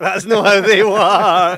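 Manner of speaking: exasperated outburst.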